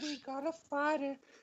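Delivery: very high, loud, excited whooping voice. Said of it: "You could just imagine Herbert sitting there just going".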